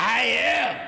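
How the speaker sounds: very loud, high-pitched shrieking scream. Recounting a past moment, reenacting own screaming reply; retelling own scream. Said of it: "and I'm screaming".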